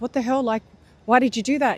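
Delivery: put-on alarm, fast, freaked-out, words tumbling out. Retelling a story, acting out a companion's shocked protest: imitating a freaked-out outburst. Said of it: "Musa freaks out again".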